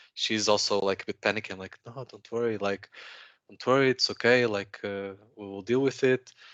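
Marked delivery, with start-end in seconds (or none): 1.9-6.3 cool, calm, reassuring macho tone. Retelling reassuring a lady beside him at a police stop: imitating own calm macho reassurance. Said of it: "you wanna keep it cool and be like".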